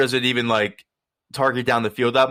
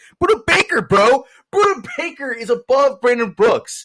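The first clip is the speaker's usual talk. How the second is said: high, screaming, outraged voice; 11 semitones higher, 4 dB louder than usual. Podcaster calling a player ranking list an outrage; screaming into the mic. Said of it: "I'm screaming into the mic now".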